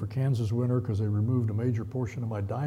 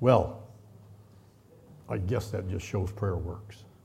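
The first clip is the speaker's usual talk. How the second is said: deadpan, low, flat and unenthused tone; 4 semitones lower than usual. Retelling what the guy told him, imitating a doctor's unexcited tone. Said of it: "I'll try to imitate his tone of voice".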